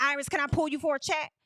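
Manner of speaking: loud, imitated way of talking. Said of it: "as loud as you was when you said".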